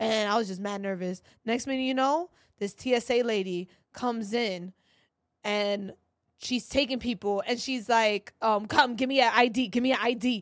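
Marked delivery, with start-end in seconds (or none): 8.4-10.4 acted-out, pushy, aggressive, demanding officer voice. Retelling an airport line, the speaker quotes a TSA lady: imitating an aggressive TSA officer. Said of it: "She's aggressive".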